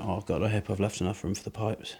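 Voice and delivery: grumpy, unwilling tone. Talking to camera while fitting a mixer between wall studs, not in the mood. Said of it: "As you can tell by my tone of voice".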